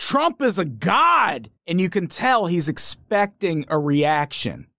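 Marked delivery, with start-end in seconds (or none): 0.0-1.5 worked-up high, slow yell, "god" stretched. Retelling what a documentary interviewee did: imitating someone screaming. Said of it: "he just screams".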